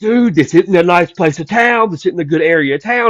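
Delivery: high, frantic, panicky, alarmed freaking-out voice. Telling a story about a man at the house, imitating someone freaking out. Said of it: "he's just like freaking out".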